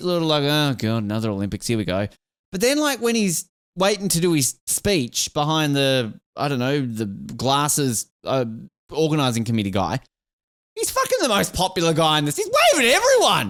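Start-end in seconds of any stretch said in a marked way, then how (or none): 0.4-2.1 weary, deeply bored, unimpressed, very low voice. Imitating an official who looks bored at the opening: imitating a bored Jacques Rogge. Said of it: "He's a bit bored looking".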